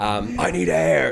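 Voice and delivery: put-on rasping, gruff American accent, rough and creaky. Retelling a sweating guy he works with demanding air: gruff American voice. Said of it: "this really, like, gruff American voice".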